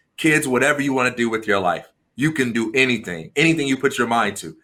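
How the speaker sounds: ordinary delivery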